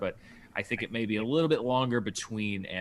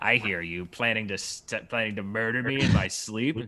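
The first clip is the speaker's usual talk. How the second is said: put-on old lady voice, louder; 5 dB louder than usual. Retelling a movie scene: imitating the old lady from the movie. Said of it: "She's like".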